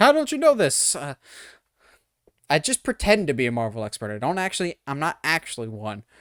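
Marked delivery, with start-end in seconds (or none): 0.0-1.0 put-on very high, shrill, loud screaming. Imagining commenters correcting a mistake, imitating commenters screaming. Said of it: "they're just screaming at me".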